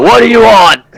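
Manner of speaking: very high-pitched, gruff, loud voice. The game master voices someone answering a knock at the door, gruff voice. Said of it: "You hear a gruff voice go".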